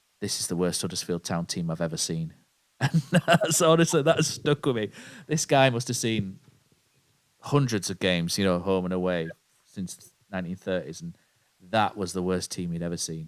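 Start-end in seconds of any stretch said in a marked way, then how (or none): 0.2-2.3 put-on deadpan, much lower. Quoting a longtime fan's remark after a match, retelling a deadpan remark. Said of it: "and just deadpan just went".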